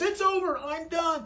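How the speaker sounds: high, drawn-out scream at the top of the lungs. Retelling a couple bursting into an office: imitating a man screaming. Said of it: "The man screaming at the top of his voice".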